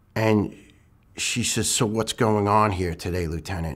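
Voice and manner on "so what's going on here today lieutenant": put-on annoyed tone. Retelling what the late doctor said on arriving, imitating an annoyed doctor. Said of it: "as if annoyed".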